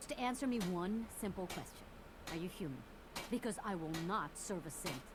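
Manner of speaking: hostile, hushed whisper. Questioning someone about being human: hostile. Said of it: "They sounded so hostile".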